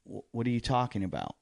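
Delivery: normal talking voice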